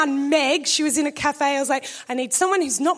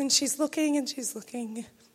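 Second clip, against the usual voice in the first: usual speaking voice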